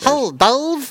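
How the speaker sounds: very high, squeaky cartoon chipmunk voice. A co-host greets the other host in a chipmunk voice. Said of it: "my co-host can do a great chipmunk impression".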